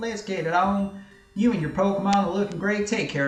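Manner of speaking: put-on southern Texan country accent. Reading game lines aloud for fun: put-on Texan accent. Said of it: "I'll stick with my English accent".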